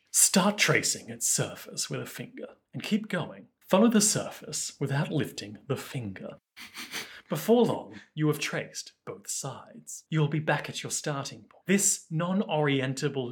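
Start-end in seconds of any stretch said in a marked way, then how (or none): 0.1-11.6 soft, calm, soothing relaxation-tape voice. Speaking like a relaxation tape to the other speaker: relaxing, soothing voice. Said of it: "like a really relaxing, soothing voice".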